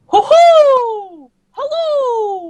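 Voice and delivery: put-on high-pitched cartoon mouse voice. Doing a cartoon character voice for the group: Mickey Mouse voice. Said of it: "Mickey Mouse".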